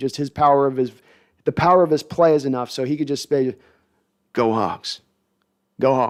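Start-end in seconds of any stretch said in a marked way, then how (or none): 4.3-6.1 put-on slight Oklahoma accent, low pitch, slow pace. Imagining the Hall of Famer saying the team cheer: Steve Largent, slight Oklahoma accent. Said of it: "he's got the little bit of Oklahoma accent".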